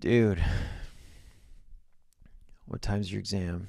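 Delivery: mock just-woken, soft, groggy, drowsy voice. Retelling how his roommate woke him on exam morning, imitating Anthony's groggy wake-up voice. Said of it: "gives me the groggy roommate wake-up voice".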